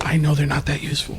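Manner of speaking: hushed, half-whispered voice. Roleplaying, a player half-whispers to another character while walking by: half-whispering. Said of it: "I whisper in his ear".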